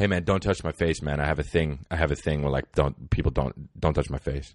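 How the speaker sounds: mock grave, dead-serious, very low voice. Retelling a big guy at a party warning others off: imitating someone getting real serious. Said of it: "he got real serious".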